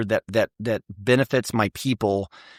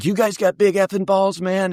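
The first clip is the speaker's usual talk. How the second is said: high, hollering yell, repeated over and over; 8 semitones higher, 3 dB louder than usual. Retelling what a guy kept yelling on the ride to Bagram: retelling a guy's yelling. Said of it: "And he's yelling this the whole ride".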